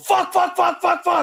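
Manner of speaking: put-on, very high, terrified, frightened shrieking screams. Describing a ghost-hunting game, showing their own scared scream. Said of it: "that's my scared uh, voice and scream".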